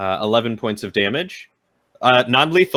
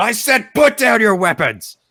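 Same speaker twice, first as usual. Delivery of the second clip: shrill, high-pitched yell; 12 semitones higher, 4 dB louder than usual. Yelling at enemies in a fight for them to drop weapons: yelling a command. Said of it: "I'm just gonna yell again".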